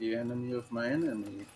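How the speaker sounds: quiet half-whispered tone. A player speaking in character pulls a companion aside, half-whispering. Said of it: "I'm whispering".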